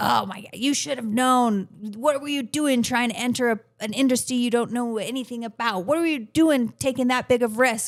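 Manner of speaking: harsh, critical, berating voice. Describing unkind self-talk, voicing the inner critic, mimicking a harsh inner critic. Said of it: "I don't like that voice".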